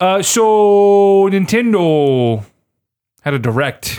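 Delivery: slight Canadian accent, very drawn-out 'so'. Making a bad transition to a new topic: a little canadian accent. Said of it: "I go a little Canadian".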